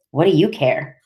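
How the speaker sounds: sharp, edgy, resentful and blaming tone. Reading a novel aloud, a girl snaps at a friend: edgy, blaming tone. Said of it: "I said with an edge to my voice".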